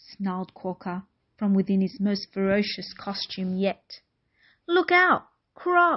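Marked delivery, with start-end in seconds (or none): 4.7-6.0 group of voices yelling, pitched high. Narrator reading Dingo, Lizard, Eagle and Redback warning the croc, yelling. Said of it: "yelled Dingo".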